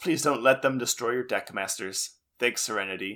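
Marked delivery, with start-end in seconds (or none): none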